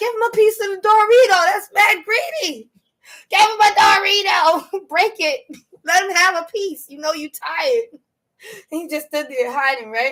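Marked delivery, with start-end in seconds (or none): 0.0-7.8 high-pitched screaming with a coaxing, pleading tone. Retelling yelling at a greedy squirrel hiding with a Dorito: retelling own past screaming. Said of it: "I'm screaming".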